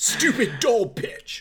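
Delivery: very high-pitched, loud character voice. Doing a Heisenberg voice after offering to: Heisenberg voice. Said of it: "I'll do Heisenberg for you anytime".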